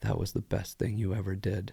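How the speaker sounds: talking while weeping, tearful. Imitating how people in movies talk while weeping: imitating someone weeping while talking. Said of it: "weeping and they're like".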